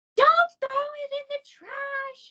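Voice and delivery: very shrill, very high, very loud scream. Retelling what the baby sister screamed: imitating baby sister screaming. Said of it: "starts screaming at me".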